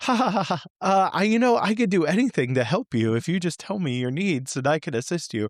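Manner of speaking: high, scripted customer-service AI bot voice. Retelling a call with a hotel's AI phone system: imitating an AI phone assistant. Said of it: "And it was just like".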